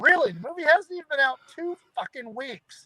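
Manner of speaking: high-pitched, incredulous, exasperated outburst.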